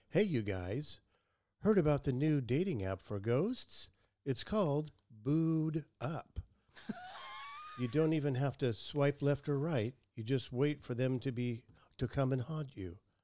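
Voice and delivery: computer-generated AI avatar voice. Telling a joke about a ghost dating app, AI-generated voice. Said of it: "I'm doing that in the tone of a AI-generated voice. Avatar".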